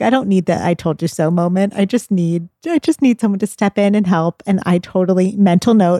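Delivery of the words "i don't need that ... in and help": usual speaking voice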